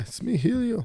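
put-on slight Brazilian accent, very high-pitched. Answering a request for a Brazilian voice, speaking as Helio: Helio voice with Brazilian accent. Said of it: "give me a little Brazilian".

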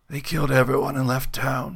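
whispering, leathery voice. Narrating a man's words to the sergeant, in a leathery whisper. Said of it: "His voice a leathery whisper".

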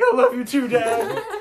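put-on high, loud, excited little boy voice.

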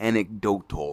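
anecdotal said slowly, broken into careful syllables. Admitting they can't say a word smoothly, so: slowly said 'anecdotal'. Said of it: "I have to say it all slow".

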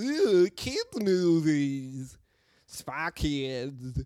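very slow, very loud, booming, drawn-out dimwit voice. Mocking how the other podcasters talk about kids movies: mocking dumb person's voice. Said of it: "That's what dumb people sound like".

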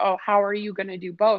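ordinary talk, nothing marked

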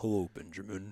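put-on deep voice. Greeting the co-host to open the podcast: put-on deep voice. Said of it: "in this deep voice".

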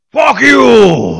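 very loud screaming outburst, "you" stretched out. Show how Bale would say it, unlike the Batman who can't raise his voice: screaming Bale Batman voice. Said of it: "He's not Scream Batman".

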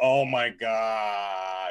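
acted exasperated, fed-up groan, God drawn out. Retelling how the chat reacts when sports come up: imitating annoyed chat. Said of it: "They get so annoyed".

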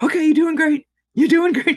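upbeat cheerleader-like voice. Retelling how she cheered the speaker on during the procedure: imitating cheerleader-like encouragement. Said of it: "she was like a cheerleader".

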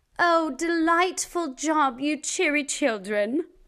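put-on British accent. Praising kids after they repeat the verse: British accent. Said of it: "today I think I will try a British accent".

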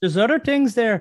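very high, loud put-on Irish accent. Repeating a line to show it in an Irish accent. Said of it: "Irish accent".

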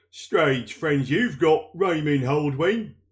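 put-on strong, sturdy, firm old man's voice. Narrating a story, a man by the cart suddenly speaks to an innkeeper: strong old man's voice. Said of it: "It was an old man's voice, but strong".

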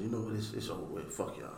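soft, low, muttered, defeated tone.

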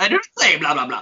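put-on Russian-style accent. Answering a friend's remark about his accent, voice like Hotel Transylvania. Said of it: "You sounded like him off Hotel Transylvania".

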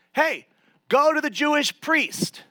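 high shout, called out across a distance. Retelling Jesus answering the lepers from afar: shouting back from a distance. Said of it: "Jesus shouts back".

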